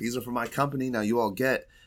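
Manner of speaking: light, mild, high-pitched yell. Storyteller acting out a woman yelling at the surrounding weasels, retelling her yell. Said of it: "she just yells".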